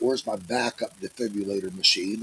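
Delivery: ordinary talk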